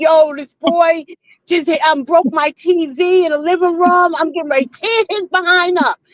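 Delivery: play-acted, tearful, furious, crying rant. Retelling calling an aunt about the boy, acting out crying on the phone. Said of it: "I'm crying like".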